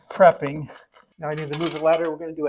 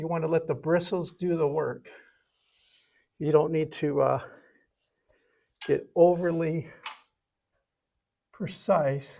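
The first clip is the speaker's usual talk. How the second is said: slightly out of breath, quieter and slower; 5 dB quieter than usual. Demonstrating how to load and drag a paint brush, a little out of breath. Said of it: "I'm a little out of breath".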